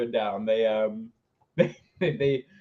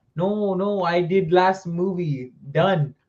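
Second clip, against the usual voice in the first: put-on slow, happy, jolly, unhurried Italian accent; 4 semitones higher, 4 dB louder than usual. Retelling a man declining to do another movie, imitating a happy Italian man. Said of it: "sound like an, uh, an, a happy Italian dude?".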